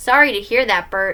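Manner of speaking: ordinary talk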